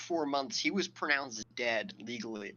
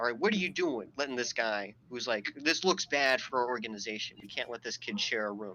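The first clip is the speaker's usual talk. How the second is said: ordinary talk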